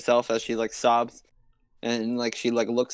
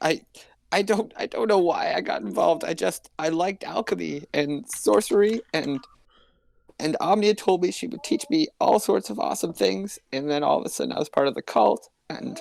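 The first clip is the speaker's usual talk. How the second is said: high, tearful, frightened voice, still half sobbing; 8 semitones higher than usual. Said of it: "still, like, sobbing a little bit".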